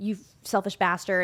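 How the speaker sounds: ordinary delivery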